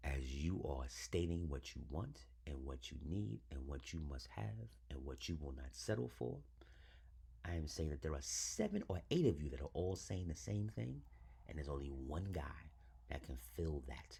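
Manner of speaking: softly spoken, one word at a time.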